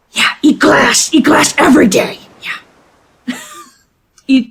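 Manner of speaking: put-on high, swooping goblin character voice. Retelling a captain interviewing a goblin for first mate, answer in goblin voice. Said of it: "And the goblin goes".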